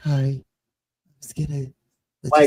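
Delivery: put-on soft, mild, gentle voice. Describing an actor's character, showing how he talks: imitating a soft gentle voice. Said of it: "he talks like he talks like this".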